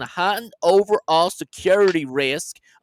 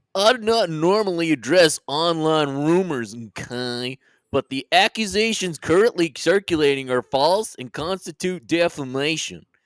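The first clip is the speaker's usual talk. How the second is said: put-on cartoon character voice. Reading a text aloud for listeners: Mr. Mackey voice. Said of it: "I will now be reading this in the voice of mister Mackey from South Park".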